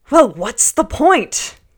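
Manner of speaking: pompous, bombastic, booming, high outburst. Retelling King Henry's reply to the lady, imitating his booming, bombastic voice. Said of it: "using his most booming, bombastic voice said".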